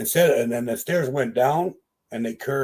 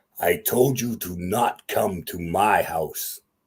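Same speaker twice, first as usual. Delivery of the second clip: horrible, ghastly voice, much lower and slower; 5 semitones lower than usual. Retelling what the six-fingered thing holding the door said, horrible voice. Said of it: "in this really horrible voice".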